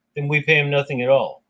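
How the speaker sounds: ordinary delivery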